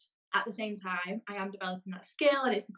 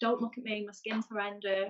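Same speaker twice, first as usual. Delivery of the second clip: usual speaking voice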